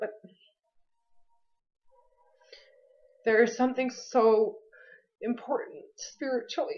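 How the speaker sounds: overcome with emotion. Speaker apologizes mid-sentence for losing it while talking about spirit: losing composure. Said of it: "I'm sorry, I'm losing it".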